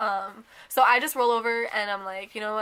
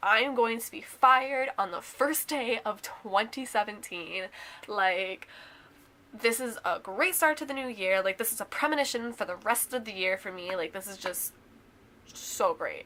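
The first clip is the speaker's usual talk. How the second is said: normal talking voice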